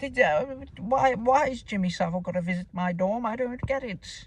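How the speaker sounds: fake English private-school accent. Mocking enunciated speech, speaking as a little private-school boy from England, put-on English schoolboy accent. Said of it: "it's Harry Potter accent".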